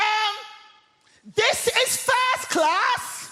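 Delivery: mock shrill, high, drawn-out indignant shout at full voice. Retelling a woman in the first class carriage shouting at them, retelling a top-of-voice shout. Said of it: "at the top of her voice, she shouts".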